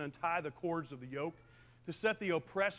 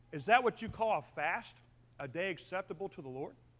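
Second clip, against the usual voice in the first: usual speaking voice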